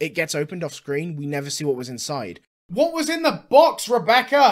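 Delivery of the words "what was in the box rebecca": put-on shout, much higher and louder. Acting out a question to Rebecca about what was in the box, mock shouting.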